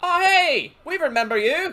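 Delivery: shrill, booming, very high, loud, drawn-out call. Voicing another guard who recognizes the travellers: voicing a second guard. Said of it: "the one on your right, goes".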